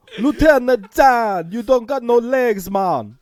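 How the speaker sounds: put-on Jamaican accent. Joking about retelling Tom Hanks movies, in a Jamaican accent. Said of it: "retell all of Tom Hanks' movies with the Jamaican accent".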